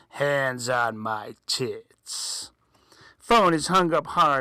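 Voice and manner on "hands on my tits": slow, deep, horrifying demon voice. Narrator reading a story, the voice on the phone in a horrifying demonic voice. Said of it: "In a horrifying demonic voice".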